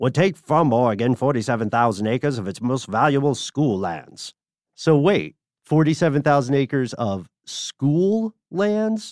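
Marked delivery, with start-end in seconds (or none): 0.0-4.3 put-on old transatlantic accent, higher. Reading a headline aloud to the others, in an old transatlantic accent. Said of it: "I'll do transatlantic voice".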